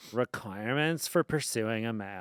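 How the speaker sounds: exaggerated, very low, overdone deep voice. Reading aloud something a friend wrote at 21, imitating Erin's voice. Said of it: "I'll do it in Erin's voice".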